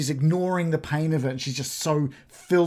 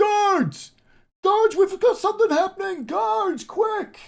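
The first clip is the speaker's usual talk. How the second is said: very high-pitched shout; 4 dB louder than usual. Narrating a game, a bystander at the bottom of the stairs shouts for the guards. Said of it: "one of them shouts out".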